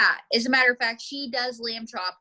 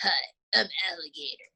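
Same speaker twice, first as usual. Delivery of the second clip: really gruff, rough, low puppet voice; 5 semitones lower, 3 dB quieter than usual. Showing a learner what voice to give him, in a really gruff voice. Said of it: "Just give him a really gruff voice".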